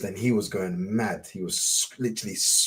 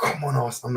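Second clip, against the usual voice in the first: mock-angry voice, much quieter; 2 semitones higher, 5 dB quieter than usual. Retelling a guy screaming at them during an Arsenal game, acting out past anger. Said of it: "and I'm so angry".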